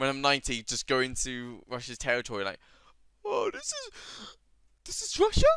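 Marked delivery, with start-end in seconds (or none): 3.2-5.5 put-on failed old man voice, very high, swooping pitch. Speaker imagines being ninety and visiting Russia, attempting an old man voice. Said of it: "Trying to do old man voice".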